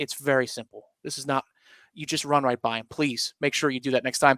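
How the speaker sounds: patient, calm, hushed half-whisper with dropped voice. Retelling how a coach dropped his voice to a player, the speaker reenacts a coach's half-whisper. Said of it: "He whispers".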